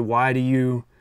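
pulled-back, held-in, easing-off delivery. Showing an alternative reading of the same line: pulled back. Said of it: "a little bit more pulled back".

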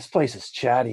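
muttering, mumbling under breath. Getting up after crashing to the ground, muttering under breath. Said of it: "I'm just sort of muttering in Orcish".

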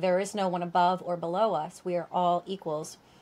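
ordinary delivery

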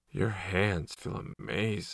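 soft, dreamy voice gone slack. Reading a story, voicing a man getting a massage: dreamy. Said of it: "his voice still dreamy".

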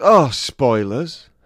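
mock shout. Recounting a woman shouting out after one of the speaker's jokes, retelling a shouted heckle. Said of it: "this woman shouts out".

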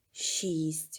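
faint, barely audible whisper. Reading fiction, a woman counting falling leaves answers a question, barely audible. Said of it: "Ледве чутно мовила Джонсі".

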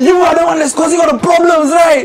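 accusing shout, pitched high.

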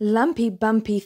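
plain reading voice

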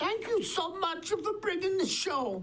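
put-on very high-pitched old-lady German accent. Retelling an old woman's thanks for bringing the show, in a German accent. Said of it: "in a German accent".

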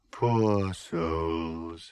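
deep, soft, otherworldly voice, words drawn out. As two climbers rest halfway down a shattered building, a voice speaks in one's ear, deep, ethereal voice. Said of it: "said a deep, ethereal voice".

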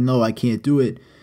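ordinary delivery

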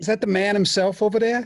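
fake New York accent. Greeting someone in a fake new york accent. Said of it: "my pseudo-New York accent".

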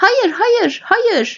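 squeaky, high, frantic protesting tone. Answering someone who says he does not belong here, the listener objects, squeaking. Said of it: "diye cikledi Dobby".

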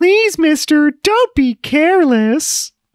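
very high, slow, drawn-out fawn voice. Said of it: "I like the voice".

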